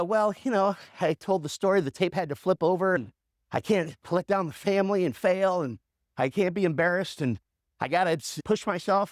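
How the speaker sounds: ordinary delivery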